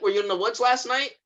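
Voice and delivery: put-on panicked voice. Retelling a show scene where a character confronts a lady: imitating panicked questioning. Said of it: "he's panicking".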